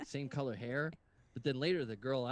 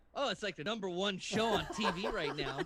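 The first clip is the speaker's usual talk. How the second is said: mock loud, raised, pitched-up voice as through a face mask; 7 semitones higher than usual. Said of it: "I'm loud because I have a mask on".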